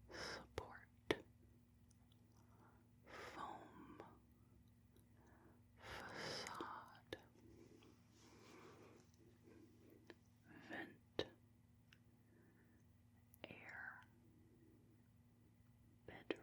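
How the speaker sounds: whispered words. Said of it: "now I'm going to do some whispering".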